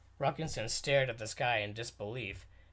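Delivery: ordinary delivery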